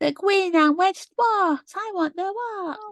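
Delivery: high, slow mocking character voice.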